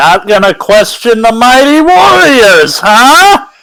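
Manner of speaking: very loud, shrill, high, swooping, rising call. A limping character speaks without looking at any of them, very loud. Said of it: "just very loudly say".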